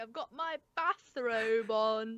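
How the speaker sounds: overdone British accent, laid on thick. Talking about British and American words for clothing, the speaker goes more British. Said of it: "Why did I go more British".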